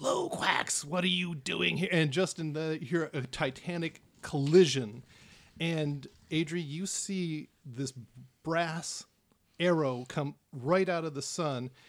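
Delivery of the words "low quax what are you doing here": furious roaring dragon scream of absolute fury. A narrator voicing the red dragon confronting a newcomer, a dragon screaming in fury. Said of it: "the red dragon just screams in absolute fury".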